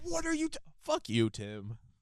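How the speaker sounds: acted, very high-pitched, swooping, shrill yell. Imitating a fan yelling at the screen: imitating Kayla F yelling at the screen. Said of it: "That's what she's saying".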